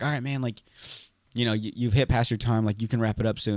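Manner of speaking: soft, hushed, low-key stage whisper. Retelling the MC telling them to wrap up: imitating a half-whisper. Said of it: "he kinda whispered to me".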